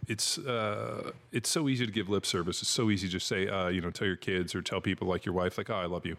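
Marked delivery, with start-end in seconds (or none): none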